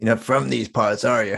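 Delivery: put-on American accent. Asked to try american accents, answering in a put-on american accent. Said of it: "let's hear your American accents".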